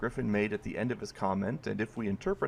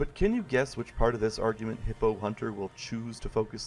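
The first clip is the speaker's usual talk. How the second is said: usual speaking voice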